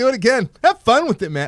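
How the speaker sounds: very high, playful, sing-song joking voice, acted. Denying a stereotype, quoting what they usually say, in a joking way. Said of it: "I say it in a joking way".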